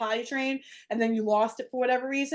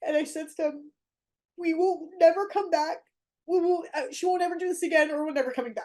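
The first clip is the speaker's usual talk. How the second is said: tearful voice, higher; 5 semitones higher than usual. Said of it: "coming out crying like I am now".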